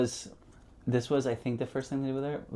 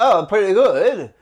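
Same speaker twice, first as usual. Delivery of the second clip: put-on high, pitched-up cartoon kid voice; 8 semitones higher, 10 dB louder than usual. Retelling how a man with a shrimp in his mouth sounded; Jimmy from South Park voice. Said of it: "his voice was very Jimmy".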